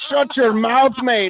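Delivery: very slow, high voice. Imitating McGregor telling someone to be quiet: McGregor voice. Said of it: "He's like".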